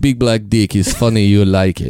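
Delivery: put-on heavy Yugoslavian accent. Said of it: "thick Yugoslavian accent".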